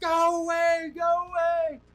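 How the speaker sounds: reenacted full-lung yell. Retelling a moment on a trail, the speaker is retelling a yell at full lungs. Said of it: "just yelling at the top of my lungs".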